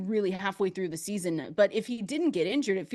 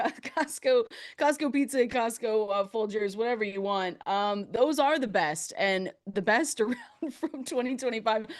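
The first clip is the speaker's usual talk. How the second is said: talking while cracking up laughing; 3 semitones higher than usual. Trying to wrap up a list after a joke: laughing while talking. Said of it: "I'm laughing".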